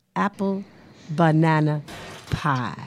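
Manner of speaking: said very slowly, drawn out and deliberate. Promoting a dish she will serve, she says its name very slowly. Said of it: "but I say it all slowly".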